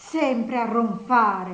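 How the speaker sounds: loud exclamation in open disgust. Nastasia, shaking the man still lying there, exclaims with disgust. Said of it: "Esclamò guardandolo con disgusto".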